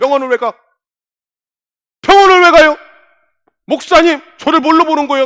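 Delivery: put-on indignant outburst, shrill, loud, high, angry. Retelling how an elder answered a question about the hospital: imitating someone angrily snapping. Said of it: "화를 내면서".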